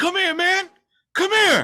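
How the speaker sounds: very high, loud, calling-out street holler. Retelling how a man outside the bank called after him, retelling a man yelling. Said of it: "was like yelling at me like to come".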